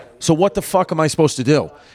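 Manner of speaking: normal talking voice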